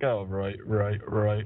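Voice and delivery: put-on offhand, unbothered, slow and casual tone. Retelling how someone said it: casual delivery. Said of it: "Why did you say it so casually?".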